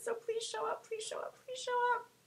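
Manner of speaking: very high, very quiet whining voice. Asking viewers to tune in tomorrow, the speaker is whining. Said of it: "I'm whining".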